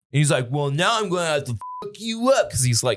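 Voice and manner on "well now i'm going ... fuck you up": put-on drunk man's voice, higher. Retelling what the drunk man said after getting his cigarette: imitating a drunk man. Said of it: "'cause he's, like, clearly drunk".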